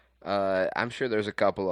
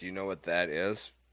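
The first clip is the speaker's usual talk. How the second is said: usual speaking voice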